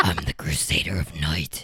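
put-on very low, scratchy, whispered growl.

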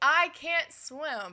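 high, loud yell. Retelling a movie scene where a character can't swim, imitating a yell. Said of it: "he's yelling".

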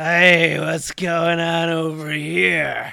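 put-on slow, slurred, drunk-sounding voice.

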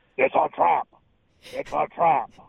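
very high, drawn-out, croaky, slow voice. Joking about a golf nickname, quoting a Star Wars fish character. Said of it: "the giant fish in Star Wars in the final battle scene where he goes".

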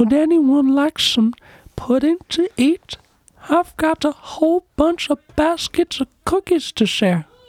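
very high, creepy character voice. Among people trading voices, one speaker does the creepy guy from Family Guy. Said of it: "That creepy guy from Family Guy".

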